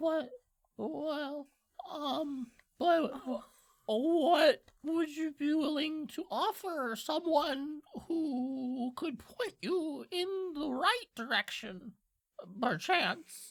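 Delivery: tiny hushed imp voice, soft, very high, very slow. Speaker voices an imp offering help for a tip, in a little quiet imp voice. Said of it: "in a little quiet voice".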